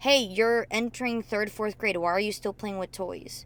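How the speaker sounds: plain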